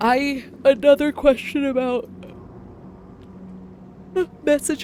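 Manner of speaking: words pushed out mid-yawn. Asking the group another question, yawning while talking. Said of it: "I'm sorry, I'm yawning".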